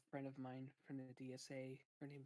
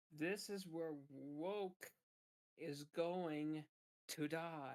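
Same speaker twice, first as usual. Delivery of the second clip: loud, slow, deliberate booming delivery, "woke" drawn out; 3 semitones higher, 7 dB louder than usual. Answering an interviewer in a mock phone interview: Ron DeSantis impression. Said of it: "Ron DeSantis, for being on the phone".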